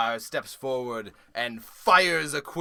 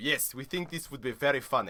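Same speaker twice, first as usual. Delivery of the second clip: put-on German accent, quieter; 7 dB quieter than usual. Voicing a character agreeing to a fight: German accent. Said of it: "They will be German now".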